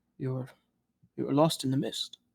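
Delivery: quiet, hushed voice. Retelling a man leaning over a counter to speak: retelling in a lowered voice. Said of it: "he lowers his voice".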